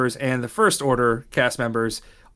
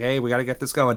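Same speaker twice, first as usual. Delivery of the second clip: mock happy, upbeat tone, quieter; 4 dB quieter than usual. Describing Rebel Alliance cast members in character: imitating an upbeat cast member. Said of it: "happy and upbeat and like".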